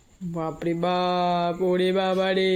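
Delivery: mock fear, low and slow.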